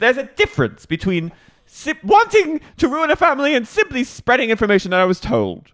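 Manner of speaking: put-on British accent pitched very high. Retelling what a cast member said to another: imitating Meredith's British accent. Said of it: "She goes back into a British accent".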